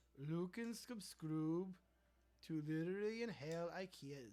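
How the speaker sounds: slow, fake, put-on Swedish accent. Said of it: "Do you like my Swedish accent?".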